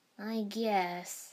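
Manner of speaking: muttering. Narrator reads a character's reply just before Sasuke asks a question, muttered. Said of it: "he muttered".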